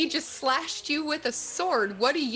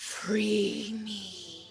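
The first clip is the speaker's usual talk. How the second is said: scary, menacing voice; 7 semitones lower, 5 dB quieter than usual. Voicing a woman who takes a deep breath and asks to be freed: scary voice. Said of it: "Oh, she's scary".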